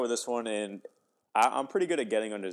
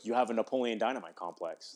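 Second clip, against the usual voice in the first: dead serious, completely earnest delivery. Retelling an argument and quoting the other person's line: imitating Zach, dead serious. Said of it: "Like, dead serious".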